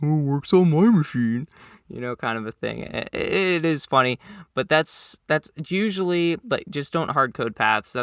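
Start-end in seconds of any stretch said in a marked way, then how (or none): 0.0-1.5 snide, mocking, sarcastic put-on tone. When shared code doesn't work, quoting the excuse: mocking put-on voice. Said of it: "in that mocking voice".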